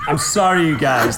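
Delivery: talking through laughter. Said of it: "I'm crying".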